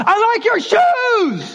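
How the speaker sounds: high-pitched, slow yelling.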